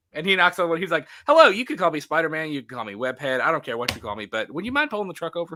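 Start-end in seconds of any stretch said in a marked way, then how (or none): 1.2-5.5 put-on dry, sarcastic politeness. Retelling a movie scene where Spider-Man knocks on a truck window: imitating sarcastic Spider-Man. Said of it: "he's just being, like, sarcastic".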